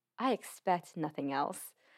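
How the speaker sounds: ordinary talk, nothing marked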